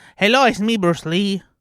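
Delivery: loud, slow, belted-out Mexican accent. Doing an impression the others asked for: Mexican Bruce Lee impression. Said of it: "That's my Mexican Bruce Lee".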